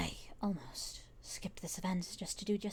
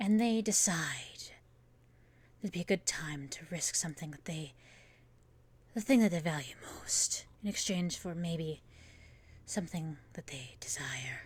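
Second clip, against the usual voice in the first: put-on character voice, strained in the throat. A DM in character answers what games the character enjoys: put-on character voice. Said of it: "I'm gonna keep talking in this voice".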